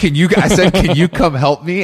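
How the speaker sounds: high, loud calling shout.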